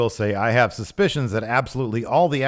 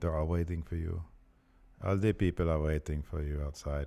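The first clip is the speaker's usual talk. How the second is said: put-on deep voice, German accent; 6 semitones lower, 11 dB quieter than usual. Quoting a trailer line from Werner Herzog: terrible Werner Herzog impression. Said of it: "That's a terrible Werner Her-, Werner Herzog, but that's not bad German accent".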